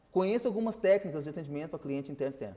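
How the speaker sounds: fast, hurried reading pace. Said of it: "vou falar um pouquinho mais rápido".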